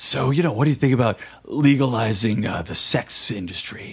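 put-on very gravelly voice. Retelling a question that a man asked, imitating a very gravelly voice. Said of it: "in a very gravelly voice".

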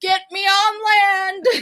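mock screaming and crying. Telling a story about being dragged into the water, retelling screaming and crying. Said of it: "I started screaming and crying".

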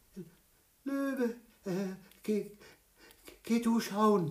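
quaking stammer, voice very high. Reading the hare speaking to the lion after the pounding at the door, stammering, trembling all over. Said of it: "stammelte der Hase und zitterte an allen Gliedern".

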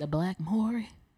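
gospel-like tone. Answering friends about Montel, in a gospel-tune delivery. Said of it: "Why you say it like that?".

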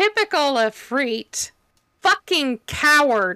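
open, high, drawn-out shouting. In a tabletop game, a player speaks a character's line in battle, yelling. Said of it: "That's what she's going to yell".

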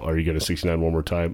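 mock straight-faced deadpan. Retelling his wife asking his father a question, imitating a dead straight face. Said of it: "she drops the, the whole bit".

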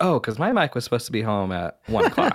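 put-on joking dad voice, swooping sing-song. Retelling a TV scene where the dad greets his late son, imitating Jason Seaver joking. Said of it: "Alan Thicke plays it as, like, a joke".

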